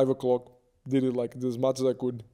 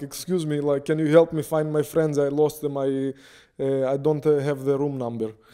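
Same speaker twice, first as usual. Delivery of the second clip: put-on thick, heavy Russian accent; 3 dB louder than usual. Retelling asking a man for a friend's room number, fake heavy Russian accent. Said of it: "with a fake, heavy Russian accent".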